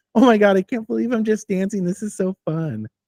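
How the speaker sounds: high, mock-giddy, gushing fake excitement. Mocking people who keep posting TikTok dance videos: mocking fake excitement. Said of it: "With that stupid look on their face".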